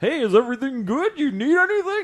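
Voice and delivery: high cartoon character voice. Retelling how nurses check in on a patient the first day: Goofy voice. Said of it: "And they sound like Goofy from D-, Disney".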